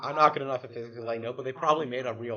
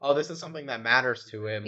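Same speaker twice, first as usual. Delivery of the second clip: normal talking voice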